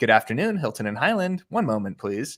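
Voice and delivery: peppy, enthusiastic, sing-song receptionist voice. Speaker recalls how phone calls had to be answered, mock-enthusiastic receptionist greeting. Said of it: "You have to be enthusiastic".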